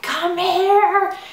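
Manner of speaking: very high, frantic yell. Retelling calling her husband over after seeing the pregnancy test: retelling a yell. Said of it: "I'm like yelling my husband's name".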